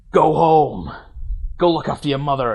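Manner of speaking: big, heavy, very dramatic line delivery. Retelling a film scene where a father sends his son home: imitating a dramatic line delivery. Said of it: "it's really dramatic".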